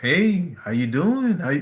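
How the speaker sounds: mock talking-down voice, high. Retelling a woman repeating her greeting, imitating her condescending tone. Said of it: "she's being like super condescending".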